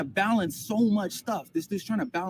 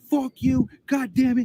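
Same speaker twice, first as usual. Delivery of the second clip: mock screaming, high, loud, lost-it outburst; 5 semitones higher, 5 dB louder than usual. Retelling a man losing it on the phone with customer service, imitating Polite screaming. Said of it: "He just screams".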